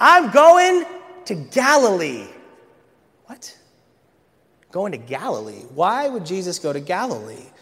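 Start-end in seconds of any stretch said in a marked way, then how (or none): 0.0-2.3 play-acted, deliberate, loud, drawn-out, high exclamation. Imagining Jesus answering a reporter's question: imagined exclamation. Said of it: "And Jesus would have exclaimed".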